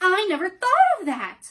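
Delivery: very loud, high, delighted joyful exclamation. A girl answers his suggestion joyfully. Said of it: "said Dorothy joyfully".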